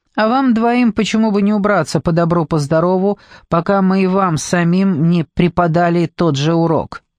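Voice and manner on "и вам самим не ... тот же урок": ordinary delivery, nothing marked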